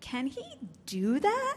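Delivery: distinctive question-like intonation. Podcast host shows how listeners ask the daily question, signature questioning intonation. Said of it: "Often in this intonation".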